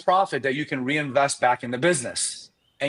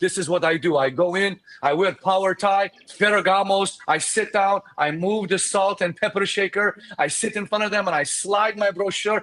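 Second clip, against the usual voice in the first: put-on big Brazilian accent, laid on; 5 semitones higher than usual. Retelling Daniel walking them through his realtor meeting, imitating Daniel's Brazilian accent. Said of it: "with this big Brazilian accent".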